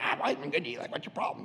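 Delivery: whispered, breathy, hushed, complaining donkey voice. Retelling the story, voicing the talking donkey: imitating the donkey complaining. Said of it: "donkey's like".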